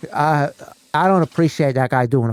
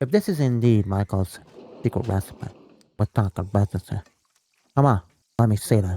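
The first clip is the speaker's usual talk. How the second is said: put-on mobster voice, pitched lower; 4 semitones lower, 4 dB quieter than usual. Playing a character in a skit: Don Corleone voice. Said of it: "this is the voice I'm doing now".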